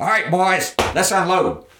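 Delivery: raspy barking voice, pitched very high. A soldier at the truck's tailgate tells the young soldiers to unload; raspy barking voice. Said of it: "barked in his raspy voice".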